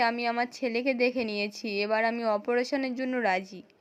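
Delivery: ordinary delivery, nothing marked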